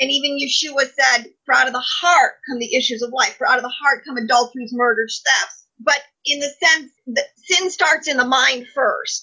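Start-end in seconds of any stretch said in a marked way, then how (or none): none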